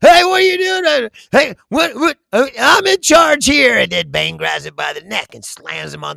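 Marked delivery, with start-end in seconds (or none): 0.0-3.8 very high, loud, stammering, sputtering yell. Retelling a movie scene where the funder protests to Bane: imitating someone yelling. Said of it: "yelling at him".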